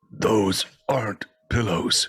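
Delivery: sleepy mumble, as if talking in sleep. Voicing a character mumbling in his sleep: mumbling in his sleep. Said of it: "mumbling in his sleep".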